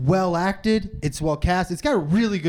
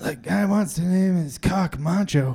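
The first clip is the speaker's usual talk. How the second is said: badly done put-on voice of a very old man. Redoing the trailer line for a clean take: Clint Eastwood impression. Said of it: "That's not a good Clint Eastwood".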